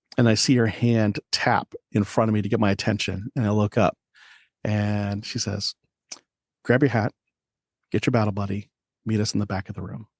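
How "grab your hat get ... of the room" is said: speaking very quietly, hushed. Retelling a sergeant's order given during a briefing: imitating someone speaking very quietly. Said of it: "Very quiet".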